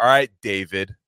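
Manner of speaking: mock-condescending tone. Imagining others calling him by his name, mock-condescending. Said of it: "calling him like condescendingly".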